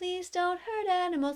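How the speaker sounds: nice, gentle, soft, sweet, high, quiet pleading voice. Speaker shows how people want them to plead for animals: nice, quiet, sweet voice. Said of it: "nice and quiet and sweet ... and talk like that".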